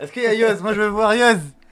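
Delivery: very loud, high-pitched, full-on shouting. A guest making his entrance on the show, shouting. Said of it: "Mais pourquoi tu cries?".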